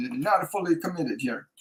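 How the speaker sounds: put-on Italian accent. Relaying what a spirit tells someone, the speaker repeats it in an italian accent. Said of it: "I'm hearing it with an Italian accent".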